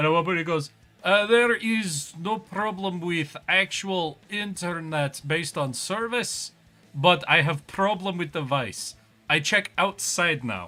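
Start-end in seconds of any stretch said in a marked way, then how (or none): 1.0-10.7 put-on slow, heavy Slavic accent laid on thick. Retelling what a technician said on arrival: imitating a thick Slavic accent. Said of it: "the thickest, like, Slavic accent".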